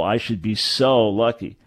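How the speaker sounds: heavy emphasis on the word so. Explaining emphasis with an example sentence, stress on so. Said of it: "the emphasis on the word so".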